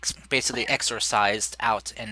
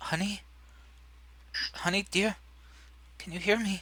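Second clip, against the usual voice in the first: barely voiced, very high-pitched, hushed whisper; 10 semitones higher, 6 dB quieter than usual. Voicing a wife cradling her husband, calling to him: whispering. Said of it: "and just kind of whispers".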